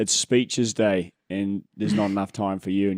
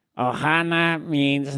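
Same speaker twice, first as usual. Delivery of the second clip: high, small, little alien voice; 6 semitones higher than usual. Trying a line in a voice after others encourage it: Stitch voice. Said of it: "Let's see if I can do anything with that".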